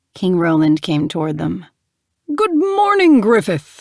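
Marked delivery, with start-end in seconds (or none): 2.3-3.8 booming, high-pitched delivery. Narrating a king greeting Griffith as he comes toward them, in a booming voice. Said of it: "he said in his booming voice".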